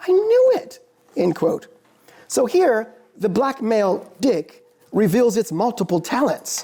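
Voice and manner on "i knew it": high, squealed, surprised woman's voice. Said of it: "she says".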